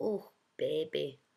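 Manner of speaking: put-on tender cooing in smoke-laden Russian accent. Retelling an old woman greeting Maximus, mock-cooing, smoky Russian accent. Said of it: "she cooed in a smoke-laden Russian accent".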